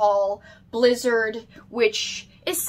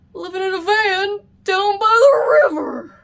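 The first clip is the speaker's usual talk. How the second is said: terrible, very high, loud yelling, badly belted; 9 semitones higher, 5 dB louder than usual. Showing an SNL magnet, the speaker quotes the character: terrible Matt Foley impression. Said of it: "it's a terrible impression".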